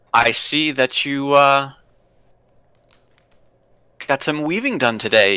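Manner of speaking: put-on old wizard character voice. Voicing a wizard who greets the party again: scraggly old wizard. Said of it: "he says".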